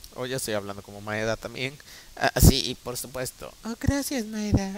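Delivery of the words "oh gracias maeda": put-on high elderly woman's voice. The speaker voices a character addressing Maeda; old woman voice. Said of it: "Ahí está, voz de vieja. Voz de mujer".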